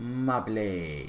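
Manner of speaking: put-on soft, cute little French accent. Describing a game character who nicknames the hero, quoting her in a cute little French accent. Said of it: "In her cute little French accent".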